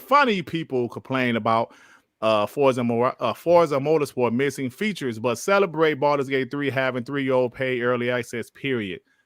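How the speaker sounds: ordinary talk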